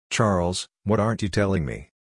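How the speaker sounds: ordinary delivery, nothing marked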